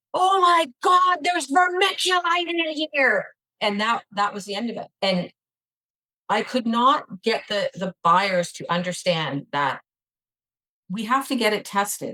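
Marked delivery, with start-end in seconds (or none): 0.2-3.3 yelled out, pitched very high.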